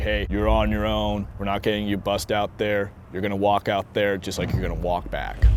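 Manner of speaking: plain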